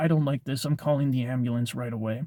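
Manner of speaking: usual speaking voice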